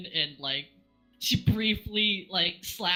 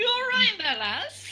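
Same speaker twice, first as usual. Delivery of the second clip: laughing while talking, much higher pitch; 14 semitones higher than usual. In a game scene, Mori checks on Sybil after she hits the floor, laughing while talking. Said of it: "just bursts out laughing".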